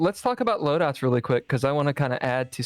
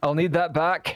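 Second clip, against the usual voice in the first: clumsy, badly done put-on Scottish accent; 3 semitones higher than usual. Voicing a character handing over a loaned revolver: bad Scottish accent. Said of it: "I do a bad Scottish accent".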